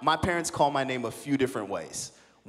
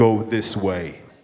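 loud, booming put-on divine voice; 5 semitones lower, 7 dB louder than usual. Describing how God's voice can sound: booming voice of God. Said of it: "this booming voice like".

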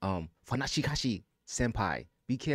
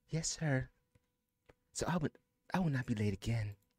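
put-on ladylike voice, much higher; 4 semitones higher, 4 dB quieter than usual. In a skit, answering a scolding about being late, in a lady voice. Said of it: "I'm going to put my lady voice on".

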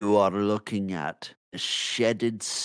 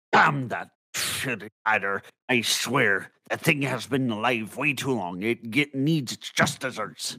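full-blown, very angry, furious outburst; 3 semitones higher than usual. Voicing a character who pounds his paw on the desk, very angry. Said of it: "pounds his paw on the desk like in a very angry".

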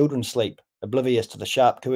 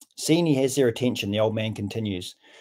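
usual speaking voice

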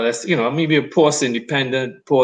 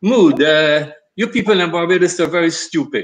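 put-on high Senegalese French-Wolof accented English; 5 semitones higher, 4 dB louder than usual. Recalling a Senegalese film director speaking to him: French Wolof English accent. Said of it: "in his French Wolof English accent".

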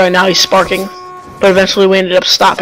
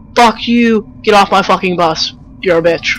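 mock furious, fed-up cussing outburst. Retelling how the game's bus driver cusses you out: imitating an angry bus driver cussing. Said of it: "all of a sudden he starts to get pissed off".

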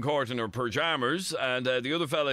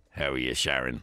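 put-on sleazy, creepy dirty-old-man voice; 13 semitones lower than usual. Showing how a man sounded greeting Sharon, dirty old fella voice. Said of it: "isn't that what he sounded like?".

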